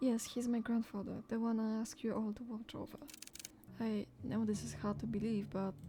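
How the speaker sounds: ordinary delivery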